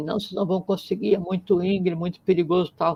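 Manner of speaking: high, fast shouting by a crowd. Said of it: "todo mundo começou a gritar assim".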